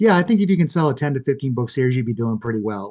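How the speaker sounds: put-on, heavily sarcastic, sing-song voice. Retelling a writing teacher's reply to a student's series plan, imitating sarcasm. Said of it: "like sarcastically".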